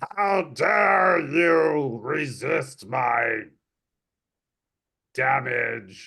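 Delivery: creature cry, held back. A game master voicing a were-rat creature yelling at a player. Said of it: "this creature yells out".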